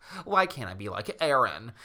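ordinary talk, nothing marked

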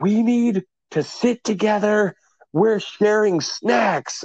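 very high-pitched, drawn-out shout. Retelling a bus trip, the speaker voices a mother rearranging passengers, imitating a woman shouting. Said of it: "she's shouting at everyone at the top".

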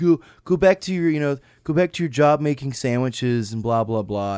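high, loud mocking jeer.

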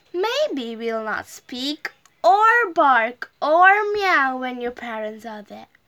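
ordinary delivery, nothing marked

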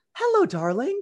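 open, lovely, very warm, very high-pitched voice. Doing a quick impression of her mom's mom, imitating a warm grandmother. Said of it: "Just very warm, open, lovely".

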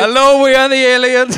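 loud, high put-on Indian accent, alien voice. Joking about aliens landing, the speaker voices the aliens, alien with Indian accent. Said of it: "aliens come down and they just all have Indian accents".

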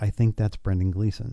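acted whisper. Retelling leaning over to a wife in a theater: retelling a whisper. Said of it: "I lean over and I whisper to her".

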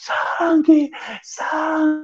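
put-on, very high-pitched, shrill yell. Retelling a friend waking on a night bus: imitating someone shouting. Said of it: "Você tava gritando".

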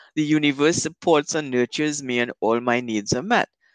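normal talking voice

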